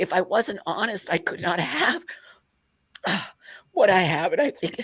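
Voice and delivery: near tears with frustration, high-pitched voice. Telling others about staying honest, crying out of frustration. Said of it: "I'm only crying out of frustration".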